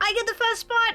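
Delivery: shouting. A player describing their character pushing past as the doors open, yelling. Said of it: "Are you yelling?".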